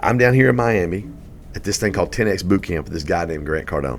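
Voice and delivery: normal talking voice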